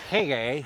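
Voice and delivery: put-on very drunk voice. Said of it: ""Fuck you" drunk".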